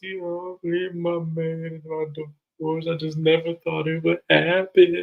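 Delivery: teary, sobbing, high, drawn-out crying lament. Retelling a cast member's complaint about her divorce: imitating Ashley crying. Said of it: "And she get to crying".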